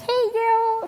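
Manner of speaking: put-on very high, bright, chirpy, cheery girl voice.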